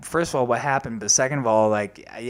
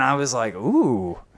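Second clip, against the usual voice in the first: plain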